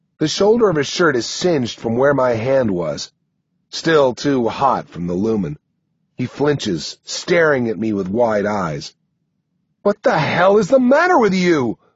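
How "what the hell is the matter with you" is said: loud, high-pitched yell. Reading fiction, the narrator shakes someone who flinches, then yells at him: yelling. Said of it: "I yell".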